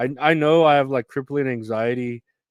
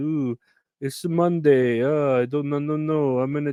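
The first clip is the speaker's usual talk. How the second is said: put-on Italian accent; 3 semitones higher than usual. Joking about people's excuses for not paying attention, Italian voice. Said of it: "that's my Italian voice".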